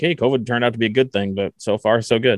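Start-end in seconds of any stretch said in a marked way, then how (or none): none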